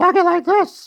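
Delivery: very high-pitched classic cartoon mouse voice. Showing what the voice in the old cartoon sounds like: Mickey Mouse voice. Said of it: "make sure I could hear the voice of Mickey Mouse".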